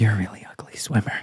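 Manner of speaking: hushed, breathy, close whisper, barely voiced. Acting out a girl on a boat mocking a swimmer: acting out a whisper. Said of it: "the girl's gonna whisper in his ear".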